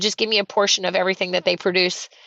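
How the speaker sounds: plain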